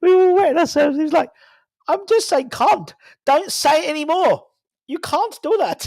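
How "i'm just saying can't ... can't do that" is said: rough attempted South African accent. Retelling what a rugby coach used to say: attempted South African accent. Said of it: "I can't do a South African accent, but I can try my best".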